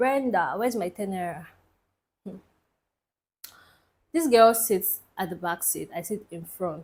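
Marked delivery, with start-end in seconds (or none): none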